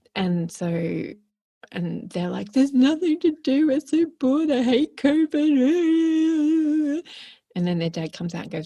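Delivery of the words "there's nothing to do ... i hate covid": mock very high, drawn-out, whiny toddler crying. Retelling how the kids react to no devices: imitating kids crying like toddlers. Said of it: "almost like toddlers again on the floor crying".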